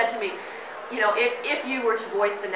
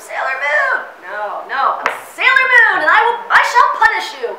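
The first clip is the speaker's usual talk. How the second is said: forced shout, much higher and much louder; 13 semitones higher, 12 dB louder than usual. A voice actor recalls straining through her lines, doing a pushed-out Sailor Moon shout. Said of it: "I had to just really push it out".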